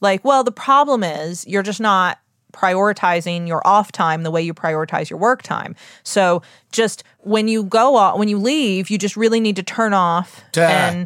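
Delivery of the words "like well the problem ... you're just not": ordinary delivery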